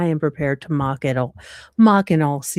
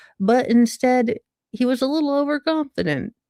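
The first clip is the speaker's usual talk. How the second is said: plain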